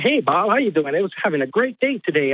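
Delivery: mock sugary, overly nice, fake-friendly chatter. Describing how they talk to each other, imitating overly nice talk. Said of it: "overly nice".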